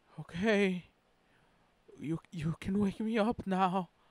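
rattled whisper. Narrator reading a character's line as bug fighters land beside a ship, rattled whisper. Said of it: "Marco said in a rattled whisper".

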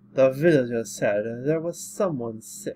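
put-on vampire voice. Voicing the vampire-looking character in a story, in a vampire accent. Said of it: "I gave him the vampire accent".

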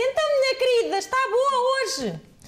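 very high, loud, patronizing talking-down shout. Demonstrating how people talk down to the elderly in care homes, condescending shouting. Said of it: "tipo aos gritos".

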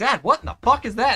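put-on dog voice. Voicing the dog Buster asking Dad about the food: voicing Buster the dog. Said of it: "you're like".

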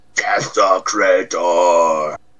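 slow, drawn-out scream. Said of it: "he screams at Eric".

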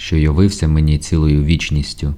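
plain reading voice

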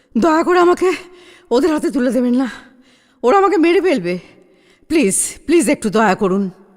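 panting, out of breath, begging, pleading. A bleeding man, hands folded, begs the household to hide him, panting and pleading. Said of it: "লোকটা হাত জোর করে হাঁপাতে হাঁপাতে বলল".

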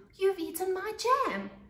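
furious, very high-pitched little shout. Narrator reading Munch confronting the enormous monster: angry shout. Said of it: "he shouted".

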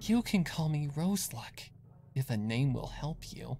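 easy, light, airy, unweighted delivery. A stranger answers Zecora's questions to Lily and Daisy, said lightly. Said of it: "the stranger said lightly".

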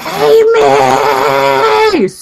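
light, half-hearted, acted-out mild yell. Telling about coming out of the bathroom to the mirror, retelling a super loud yell. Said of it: "Super loud".

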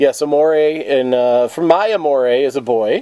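normal talking voice

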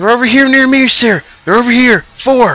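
frantic, panicked, very high, loud dwarf voice. Voicing a dwarf calling over the radio comms: panicked dwarf on the radio. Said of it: "He seems very panicked".

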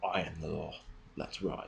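tough, rough, raspy and barely audible. Showing how Batman should say the line: tough Batman voice, not to be messed with. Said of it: "a kind of sense in his voice of, "You do not muck around with this man".

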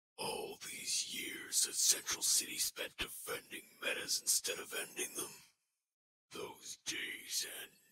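whispery voice. Demonstrating a voice effect, the speaker delivers a character line in a whispery voice. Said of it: "it's a real whisper".

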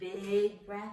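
ordinary delivery

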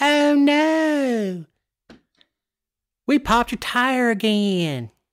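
high Southern accent with "no" drawn out. Recalling a DOT pothole commercial: Paulding County Southern voice. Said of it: "that's my Pauldy County voice".

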